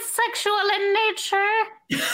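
high, slow, level, oddly drawn-out sing-song.

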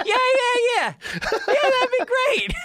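voice shoots very high, drawn-out "yeah". Complaining a man never invites him over, speaker mimics his reply: voice going way up. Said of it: "his voice goes up like 3 hours".

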